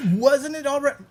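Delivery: very high, loud shouting. Cutting in on the other speaker with a question: shouting. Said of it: "I'm shouting again".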